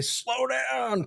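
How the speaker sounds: put-on very high, rough, creaky, grumpy old-man voice. Joking about telling fast drivers to slow down: put-on grumpy old man voice. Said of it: "the grumpy old man".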